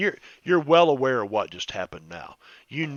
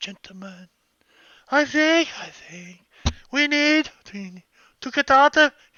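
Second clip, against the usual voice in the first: very high, echoing voice ringing from above; 4 dB louder than usual. Retelling a character's words echoing from above: echoing voice from above. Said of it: "And it echoes".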